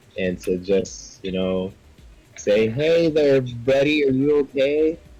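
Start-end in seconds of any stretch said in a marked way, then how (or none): 2.7-5.0 big, booming, loud voice, as if amplified. A player character, magically amplified, calls to a figure thirty feet away, booming voice. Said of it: "your three times booming voice".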